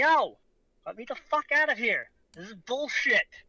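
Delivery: mild, fed-up holler. Voicing a captive pounding on a locked door: yelling in character. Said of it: "start pounding on the door and yell".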